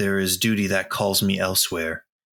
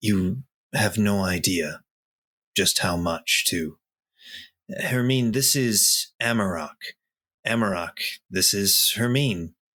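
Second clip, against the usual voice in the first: subdued, toned-down, held-back delivery. A character answers her remark that he has changed, in a little quieter voice. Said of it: "in a little bit of a more quiet voice says".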